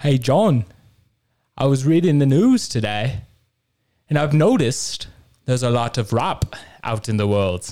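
imitated Liverpool accent. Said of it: "I could do a really good [name] accent".

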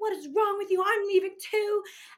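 very high, loud screaming fit. Retelling a scene where someone was told to leave, retelling own screaming. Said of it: "And I'm screaming".

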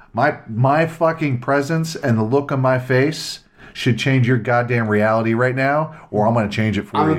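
normal talking voice

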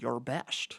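very quiet, barely above a murmur. Acting out a movie scene, answering the other character: Sean Connery impression. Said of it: "And then Sean Connery's like".

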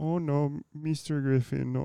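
attempted put-on Mexican accent. Speaker works toward a voice by quoting a remembered line, mexican accent attempt. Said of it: "start Chinese and turn it Mexican".

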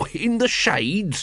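put-on wheezing. Reading Nobby's reply after choking on smoke, wheezing. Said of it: "he wheezed".

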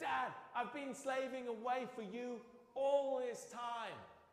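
very high, angry, bitter. Retelling the prodigal son story, the speaker voices the disgusted older son, acting out an angry, bitter son. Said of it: "He's angry, he's bitter".

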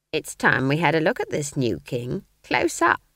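cackling delivery. Narrator reads Granny's remark to Magrat, cackling. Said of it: "She cackled".

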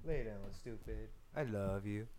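very soft, low, fond voice. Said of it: "That's how I talk to all my Tinder dates".

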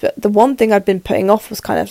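usual speaking voice

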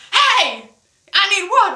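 loud, high-pitched yell. Speaker retells calling out to a security guard while holding someone up, retelling a yell. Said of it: "I'm yelling at".

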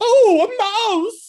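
very high, very loud, flamboyant shriek. Describing a cartoon elephant afraid of a mouse, speaker quotes it in a flamboyant voice. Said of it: "they get like a very flamboyant voice".

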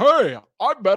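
put-on kids' commercial voice-over announcer delivery. Acting out a hypothetical ad read, in a Lego commercial voice. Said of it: "Why did you say that like the Lego commercials?".

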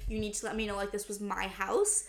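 ordinary talk, nothing marked

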